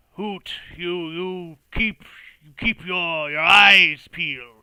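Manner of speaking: shaky, woozy, very loud, slow drawl. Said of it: "kind of shakingly, kind of woozily".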